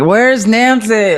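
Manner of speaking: put-on lost, bewildered voice, high, calling out. Describing a clip of a man before playing it, imitating someone yelling. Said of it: "he's like yelling".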